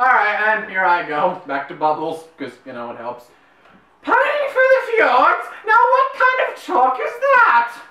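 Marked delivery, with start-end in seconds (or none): 4.0-7.7 very high, posh British comic sketch-style delivery. Announcing here I go, the speaker launches into a John Cleese impression. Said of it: "do your best John Cleese impression".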